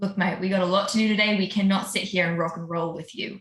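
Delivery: whispered, in character. Whispering to a golem, hand over mouth, in character: whispering in character. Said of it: "and just whisper over to this".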